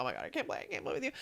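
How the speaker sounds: fast, frantic, panicked whisper. Discussing strategic game players, retelling Rick's reaction to a direct question, imitating Rick freaking out. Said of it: "he was freaking out like".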